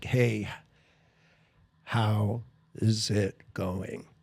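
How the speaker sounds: very slow, drawn-out delivery. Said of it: "like, really slow".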